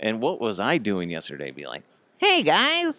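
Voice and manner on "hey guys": very high, squeaky, failed cartoon voice. Showing what was tried yesterday: Cartman voice. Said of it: "I was trying to do Cartman yesterday".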